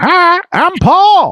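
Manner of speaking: very high cartoon monkey voice, pitched way up. Describing a studio's end card with a three-eyed monkey: Paul the monkey voice. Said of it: "he would go".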